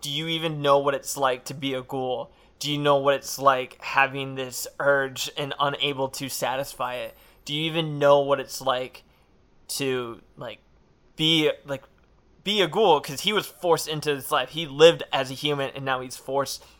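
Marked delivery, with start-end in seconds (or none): none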